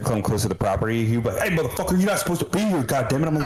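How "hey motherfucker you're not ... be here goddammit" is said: mock dog-like hollering, high-pitched and angry. Speaker acts out their dog barking at someone near the property: imitating the dog yelling. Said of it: "I don't know what he's yelling at".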